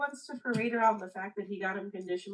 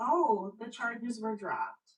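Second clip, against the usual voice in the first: put-on snarky, sardonic tone. Retelling what the ex said in mediation: imitating a snarky remark. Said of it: "very snarky".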